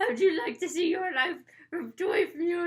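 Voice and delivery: attempted Scottish accent. Quoting what she says in the story, doing a scottish accent. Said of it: "That's my Scottish accent".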